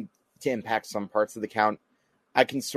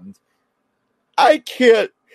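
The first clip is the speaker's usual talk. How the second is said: words swallowed by very high, very loud yawning; 13 semitones higher, 12 dB louder than usual. Talking with another person and breaking off into yawning. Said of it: "I don't know why I'm yawning here".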